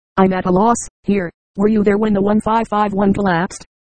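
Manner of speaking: usual speaking voice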